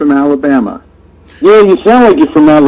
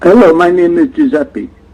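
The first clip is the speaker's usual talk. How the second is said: put-on partly Indian accent. Answering a call-in show as "Giuseppe": fake half Indian accent. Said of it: "Your accent don't work".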